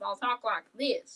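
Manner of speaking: American Southern accent. Showing how they talk when visiting West Virginia: Southern accent. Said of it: "I talk a little more like I'm from the South".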